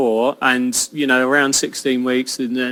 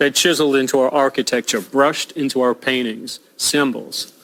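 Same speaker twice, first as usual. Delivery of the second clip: put-on general American English accent. Asked to give a line in an american accent: american accent. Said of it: "Give us a line in your American accent".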